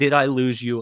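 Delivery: worked-up, frantic, pleading tone. Retelling a scene, voicing the man who cheated, imitating a frantic plea. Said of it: "he is so like frantic".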